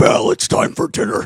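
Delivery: very loud, rough, roaring monster voice. Recalling pretending at the piano's lowest keys: pretend Beast voice. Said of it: "I would pretend to be the Beast".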